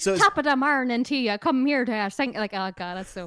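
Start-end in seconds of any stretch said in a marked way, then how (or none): 0.0-2.3 badly put-on Irish accent. Mocking how an actor might sound in panto, bad irish accent. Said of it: "Doing like a really bad Irish accent".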